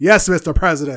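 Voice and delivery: very loud, deadpan fake anger. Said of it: "And then when she was angry".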